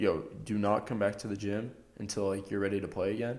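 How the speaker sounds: ordinary delivery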